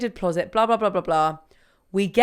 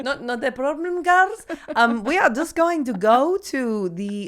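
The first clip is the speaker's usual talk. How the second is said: put-on foreign accent of a sea captain; 4 semitones higher than usual. Recounting a boat trip in rough seas, quoting captain Luca: imitating Luca's accent. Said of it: "what accent am I doing now?".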